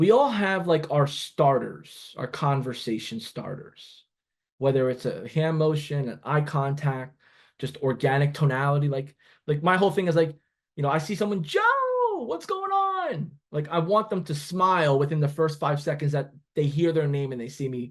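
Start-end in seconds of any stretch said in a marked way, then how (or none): 11.4-13.3 weird little friendly voice, very high. Describing how they greet people, the speaker demos their weird little friendly voice. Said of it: "like a weird, like little friendly voice".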